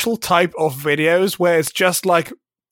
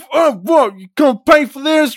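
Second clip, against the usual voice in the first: put-on high, furious, angry shouting; 9 semitones higher, 4 dB louder than usual. Acting out a store customer short of money, mock-angry shouting. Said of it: "he's like really angry and shouting like".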